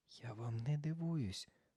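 in a whisper. [name] whispers to Sophie while Morgan keeps guessing, whispered. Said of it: "прошепотіла Чарліна Софі".

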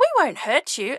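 calm, reassuring, gently spoken voice. Narrator reads Elsa speaking to a nervous young unicorn, said calmly. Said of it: "Elsa said calmly".

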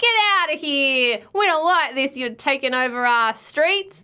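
attempted New York accent. Retelling how New Yorkers reacted to the show filming, put-on New York accent. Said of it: "That's supposed to be a New York accent".

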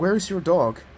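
wary, distrustful tone. A narrator reads a character questioning a stranger, suspiciously. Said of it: "Corey asked suspiciously".

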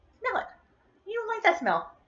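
very high, swooping, annoying pet-talk voice. Holding scented wax up for her pet to smell, speaking in an annoying voice. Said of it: "I'm sorry for the annoying voice".

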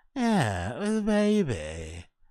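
zesty voice, stretched very slow. Mimicking the voice of the speaker in the clip: imitating an almost zesty voice. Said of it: "almost zesty v-, what is that voice?".

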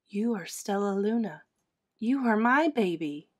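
whispering. Mother Bat recognizes Stellaluna as her baby and tells her so, whispering. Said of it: "she whispered".

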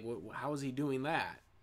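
put-on stunned, disbelieving stammer. Retelling an anime fight, quoting a character: imitating someone in disbelief. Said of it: "he couldn't believe it".

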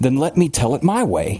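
sharp, snapping tone. Reading fiction, Billings answers Harper after a question: snapped. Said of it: "Billings snapped".

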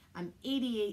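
ordinary delivery, nothing marked

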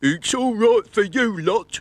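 very high, loud, complaining grumble. Talking feet complain to the other body parts, grumbling. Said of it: "grumbled the Riddler's feet".

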